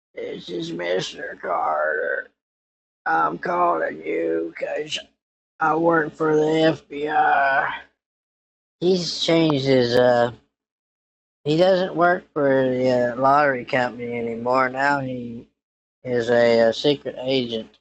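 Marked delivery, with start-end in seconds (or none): 0.2-7.8 gruff, rough, creaky voice. Speaker lets the listener hear the caller, imitating Mr. Carter's voice. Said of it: "I'll let you hear his voice".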